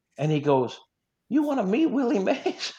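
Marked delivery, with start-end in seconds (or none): 1.3-2.8 put-on older Southern woman voice, pitched higher. Retelling Tim McCarver offering an introduction: Tim McCarver impression. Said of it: "he sounds like a, a, an older Southern woman".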